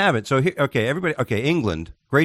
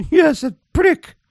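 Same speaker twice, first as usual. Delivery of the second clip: very high, loud, slow mock royal voice. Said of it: "heard the Queen saying".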